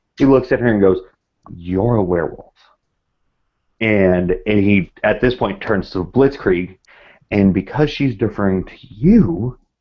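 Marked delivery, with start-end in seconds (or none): 1.6-2.6 barely audible half-whisper, just shy of silent. Voicing a character who accuses another player's character: acted near-inaudible half-whisper. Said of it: "It's very much almost a whisper".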